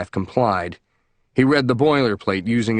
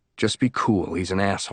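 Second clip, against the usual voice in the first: hushed, soft, confiding whisper; 3 semitones lower, 5 dB quieter than usual. Reading a scene where the lawyer leans toward the defendant in court: whispered. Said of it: "leaned over and whispered in his ear".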